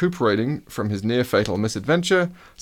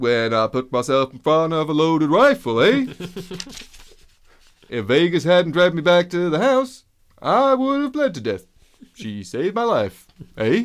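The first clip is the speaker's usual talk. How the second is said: put-on Canadian accent, pitched up; 7 semitones higher than usual. Line about being saved by Vargas: attempted Canadian accent. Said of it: "That's my first attempt at a Canadian accent".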